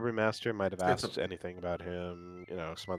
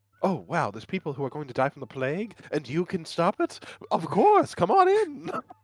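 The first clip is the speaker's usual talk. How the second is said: put-on English accent, much higher pitch; 8 semitones higher than usual. Imagining what Chappie will say, imitating Chappie with an English accent. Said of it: "I get you all giving me an English accent".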